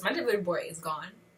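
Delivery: ordinary talk, nothing marked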